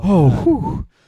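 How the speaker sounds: relieved sigh. Retelling sounds a stranger kept making in a bathroom stall: imitating a relieved sigh. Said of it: "he would do that every four or five seconds".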